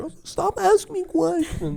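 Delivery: mocking, very high, drawn-out teen-girl voice. Imitating another speaker's shy answer: imitating a high school girl. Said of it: "she's like, you know, high school".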